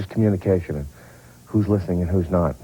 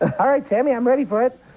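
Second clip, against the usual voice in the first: put-on boyish, very young, very high-pitched voice. Retelling a stunt, the speaker quotes William B. in a very young, high voice. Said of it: "in a very young, high voice".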